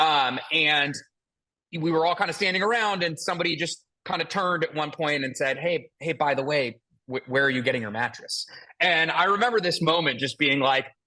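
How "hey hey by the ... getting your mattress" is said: acted whisper. Retelling a question someone asked at a conference: imitating someone whispering. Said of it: "Why is everybody whispering?".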